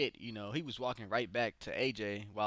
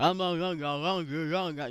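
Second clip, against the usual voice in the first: put-on rural Southern accent; 6 semitones higher, 7 dB louder than usual. Retelling how a wrestler taunted his opponent: imitating AJ Styles, redneck Southern accent. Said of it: "he got that little redneck Southern accent".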